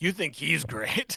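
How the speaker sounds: put-on slow, drawn-out old man voice. Acting out an old guy at the end of a bar: imitating an old guy at a bar. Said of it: "an old guy at the end of the bar being like".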